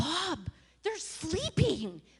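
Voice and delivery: yelled out high and swooping. Retelling telling the honking driver to stop at two AM: retelling own yell. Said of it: "and I'm yelling".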